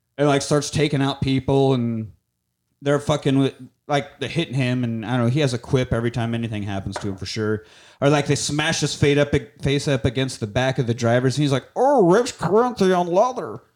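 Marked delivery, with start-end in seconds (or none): 11.8-13.5 high, pitched-up cartoon voice. Quoting a movie line: Meatwad voice. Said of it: "He sounded like Meatwad right there".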